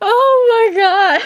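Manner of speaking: speaking through laughter. Reacting to a funny scene, laughing while talking. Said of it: "I can't stop laughing".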